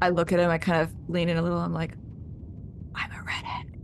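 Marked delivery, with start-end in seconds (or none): 2.9-3.7 hushed, breathy, barely voiced whisper. Leaning in toward him after being told the cameras aren't on, whispering. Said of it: "Why are we whispering?".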